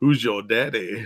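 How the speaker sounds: deliberately creepy, unsettling voice. On stream, explaining another sense of father figure, in a creepy voice. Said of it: "that was my creepy voice".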